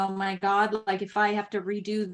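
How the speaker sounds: ordinary delivery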